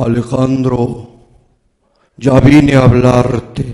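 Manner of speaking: heavy, thick, very deep low voice. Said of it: "con una voz gruesa".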